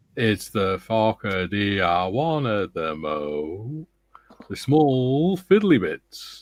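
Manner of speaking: unhurried, deliberate, slowed-down, drawn-out reading. Reading out David's message, speaking slower. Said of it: "I'm just speaking slower".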